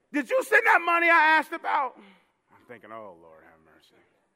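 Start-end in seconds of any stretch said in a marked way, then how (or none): 0.1-1.9 put-on shrill, high drunken hollering at full volume. Speaker retells a drunk man's phone call, imitating a loud drunk. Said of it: "They are so loud on the phone".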